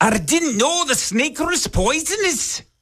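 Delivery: put-on very high, slow Scottish accent. Retelling what a dad from Scotland said about a snake: offensive Scottish accent. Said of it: "that was an offensive Scottish accent".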